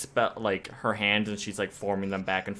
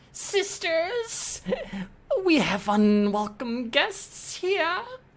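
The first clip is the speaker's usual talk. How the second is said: put-on very high, swooping, sing-song old lady voice. Voicing the old lady calling her sisters: voicing an old lady. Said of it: "she'll turn around and she says".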